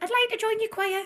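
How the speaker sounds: put-on very high, small voice with Mackem accent. Retelling how a former pupil asked to join the choir: Holly's voice. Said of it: "in Holly's voice".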